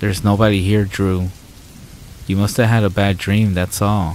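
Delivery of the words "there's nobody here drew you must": plain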